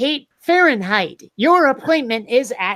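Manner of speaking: robotic, automated text-to-speech computer voice. Recounting how an automated computer voice mispronounces the speaker's name: imitating the computer voice. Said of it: "the computer voice".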